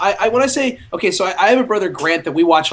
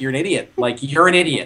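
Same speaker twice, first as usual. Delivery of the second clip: mocking, scornful tone in a lower voice; 5 semitones lower than usual. Retelling how a brother reacts to jokes about a movie: imitating Matt mocking. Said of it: "he mocks me. Like, he's just like".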